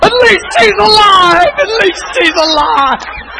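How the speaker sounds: high, loud, slow tearful cry of relief.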